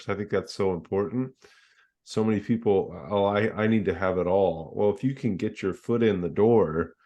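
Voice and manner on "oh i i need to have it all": ordinary delivery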